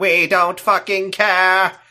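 loud, choppy, robotic delivery. Describing Daleks shooting Cybermen, the speaker voices their reaction: Dalek voice. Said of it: "that's a Dalek voice".

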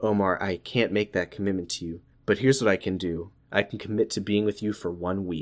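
low, soft, dead-serious voice.

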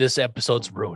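usual speaking voice

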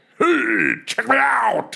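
very high, creaky, swooping, raspy put-on voice. After talking about drag queens, showing off an impression of someone. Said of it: "That was a pretty good impression of someone".

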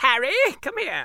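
shrill, squeaky, high, loud fake English accent. Recalling reading the books aloud to their kids with character voices, bad english accent. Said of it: "my stupid little English voices".

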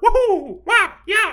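very high, loud, cheery woohoo whoops.

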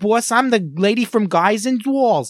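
very high-pitched New York cartoon voice. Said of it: "when everyone does Harley Quinn".

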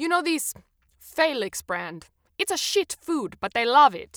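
terrible mock Italian accent. Quoting what a vet with a strong italian accent said: terrible italian accent. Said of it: "Sorry for my terrible Italian accent".

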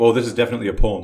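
ordinary delivery

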